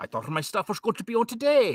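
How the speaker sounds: bad put-on Scottish accent, high and swooping. Imitating the guest from Scotland expecting his show today: attempted Scottish accent. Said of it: "please excuse his accent".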